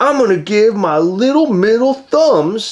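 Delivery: easygoing, lazy, slow, drawn-out cartoon dog voice. Chatting with a co-host about dogs, doing a laid-back Proto the dog voice. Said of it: "I messed toes. up the voice".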